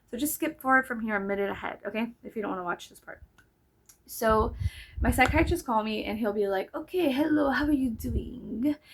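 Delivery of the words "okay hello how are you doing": slow put-on French accent. Retelling a psychiatrist's phone call, imitating his French-sounding accent. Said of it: "it almost sounds French".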